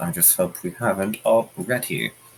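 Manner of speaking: soft, low mutter under the breath, half to oneself. Voicing a character in the swamp before she turns to the party, muttered under breath. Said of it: "she kind of mutters this under her breath".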